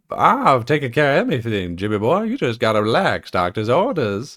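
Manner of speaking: put-on drawling Southern accent. Retelling what Bones says to Kirk in the episode: Bones's Southern drawl. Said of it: "the Southern drawl type deal".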